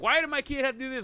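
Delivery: play-acted, high-pitched, irate angry parent voice. Retelling how parents at board meetings yell: imitating parents yelling. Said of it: "yelling and screaming".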